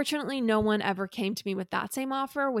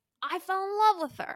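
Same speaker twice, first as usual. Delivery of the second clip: put-on Brooklyn accent, very high pitch; 10 semitones higher than usual. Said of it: "this Brooklyn accent".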